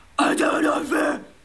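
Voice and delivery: very slow, breathy, air-leaking, drawn-out high yell. Demonstrating the wrong way to deliver a line, leaking all the air. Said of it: "spend all your air in".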